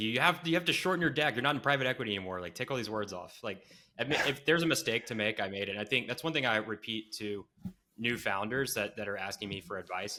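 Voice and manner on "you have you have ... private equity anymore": mock blunt, bossy, firm scolding tone. Retelling being yelled at by Meltem: imitating Meltem yelling. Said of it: "yelling at me".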